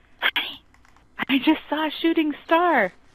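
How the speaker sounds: stage whisper, pitched high. Retelling what she said to her honey on a boat: retold stage whisper. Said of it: "in like a stage whisper".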